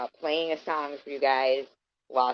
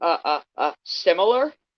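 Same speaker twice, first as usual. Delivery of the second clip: slow, halting stammer, stuck on every "uh"; 3 semitones higher, 4 dB louder than usual. Retelling a neighbor's flustered answer: imitating someone stuttering.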